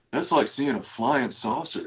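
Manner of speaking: put-on stretched-vowel Memphis accent. Retelling what Charlie said on hearing he never drank, Charlie's soft Memphis drawl. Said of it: "soft spoken, like Memphis drawl".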